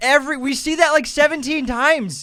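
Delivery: very high-pitched, loud, near-screaming outburst. Discussing a movie with another speaker, screaming. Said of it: "I'm like screaming".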